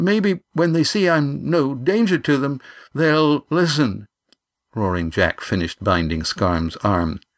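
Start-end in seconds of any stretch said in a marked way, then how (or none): 0.0-4.1 trembling, pitched-up voice, partly put on. Yan speaks to the skipper after a silence, with a tremble in his voice. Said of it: "he said with a tremble in his voice".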